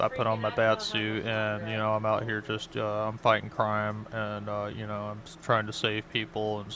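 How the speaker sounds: put-on unenergized level monotone drone with fillers. Describing how he talks to somebody else: imitating a low-energy talker. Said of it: "monotone affection... He's not as energized".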